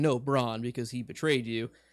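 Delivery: normal talking voice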